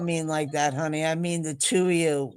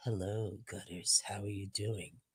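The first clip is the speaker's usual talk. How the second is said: deep, very low, barely audible, hushed sultry voice; 8 semitones lower, 15 dB quieter than usual. Retelling how the two greeted each other: imitating Matrix's sexy voice. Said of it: "were practicing their sexy voices".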